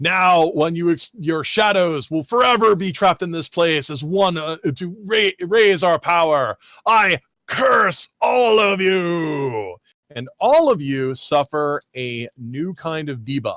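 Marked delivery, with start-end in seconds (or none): 0.0-9.8 dramatic, menacing, pitched-up delivery. Narrating a scene, voicing the booming voice as it threatens the group: booming threatening voice. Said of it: "The booming voice then, uh, you know, uh, threatens".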